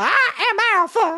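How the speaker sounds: very high, loud, belted cowgirl voice. Complaining about a villain's voice on the show, imitating Alpha: crazy cowgirl-sounding voice. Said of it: "crazy, like, cowgirl sounding".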